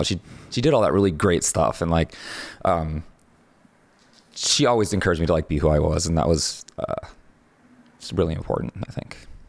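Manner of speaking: tearing up, tearful voice with rushed words. Remembering someone who always encouraged you, tearing up. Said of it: "I'm tearing up right now".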